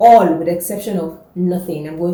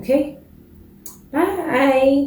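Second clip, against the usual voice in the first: voice cracking, high-pitched, on a stretched bye; 8 semitones higher than usual. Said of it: "Why did my voice just crack?".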